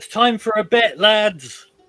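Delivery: yelling out. As players walk into a barred-off room, a voice is yelling out. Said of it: "a voice yells out".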